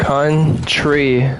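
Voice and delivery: country split into its two parts, slow, syllable-by-syllable. Showing a word that might get the video taken down, country said slowly. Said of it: "if I'll say it slowly and you can see the two words".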